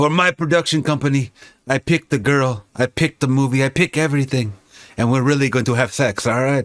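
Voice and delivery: bad put-on Belgian accent, rushed. Joking about an actor's production company: bad Van Damme accent. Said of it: "That's my bad accent".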